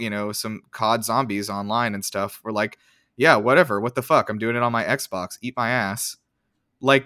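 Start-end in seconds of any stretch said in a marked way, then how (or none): none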